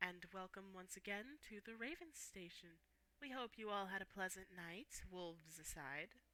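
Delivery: very quiet, soft, tired, calm announcer voice. Voicing a radio announcer on the station: very quiet, calm, tired radio voice. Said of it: "the voice just very quietly goes".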